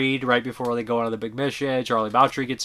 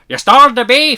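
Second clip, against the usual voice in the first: bad, overdone Irish accent, very high, very loud; 13 semitones higher, 12 dB louder than usual. Reviewing an eighties film, the speaker quotes Sheriff Brady in a bad Irish accent. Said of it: "There's my Irish accent you guys love so much".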